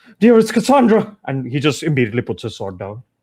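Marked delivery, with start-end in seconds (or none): 0.2-1.2 very high-pitched, loud yell. Recounting a scene where a lady calls out, retelling a yell. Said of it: "she just yells out like".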